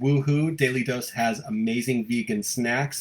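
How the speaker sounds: normal talking voice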